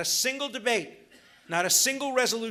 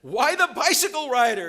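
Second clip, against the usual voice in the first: put-on stunned, baffled, loud, aghast disbelieving tone; 5 semitones higher, 7 dB louder than usual. Telling a joke about a rally, voicing the reply to the old man: mock-aghast Hitler impression. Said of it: "Hitler looks aghast and says".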